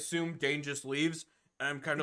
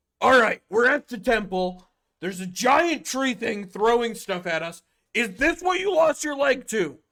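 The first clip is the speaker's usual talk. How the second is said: irritated, exasperated, annoyed, raised and pitched up; 6 semitones higher, 5 dB louder than usual. Player's character asks Dane about losing his leg, in an annoyed voice. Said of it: "kind of in an annoyed".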